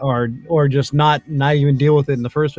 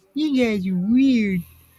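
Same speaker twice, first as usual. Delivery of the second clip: high little pet voice; 9 semitones higher than usual. Imagining how a pet would sound if she could speak, voicing the pet. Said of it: "Maybe she'd sound more like this".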